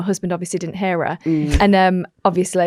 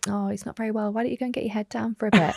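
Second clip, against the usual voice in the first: sarcastic tone with acted, mock concern; 2 semitones higher, 9 dB quieter than usual. Retelling a remark to a hungover man told to lie down: retelling a sarcastic remark. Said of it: "I say it really sarcastically".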